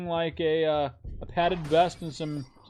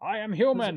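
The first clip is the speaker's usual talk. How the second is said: put-on old newsreel announcer voice, higher pitch; 4 semitones higher than usual. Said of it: "Why does he sound like Walter Winchell?".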